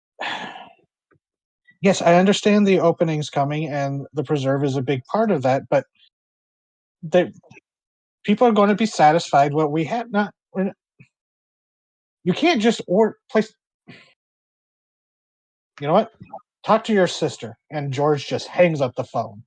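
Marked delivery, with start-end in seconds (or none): 1.9-17.6 exasperated voice. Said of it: "he's just sounds exasperated".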